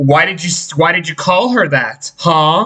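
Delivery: ordinary talk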